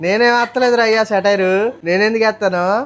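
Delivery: sarcastic, feigned innocence. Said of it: "మా గోదావరి వాళ్ళకి ఎటకారం ఎక్కువండి".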